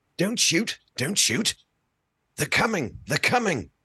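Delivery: put-on high, slow seventies British Imperial accent. Playing a character asked for a proper British Imperial accent: British Imperial accent. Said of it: "a proper nineteen seventies, nineteen eighties British Imperial accent".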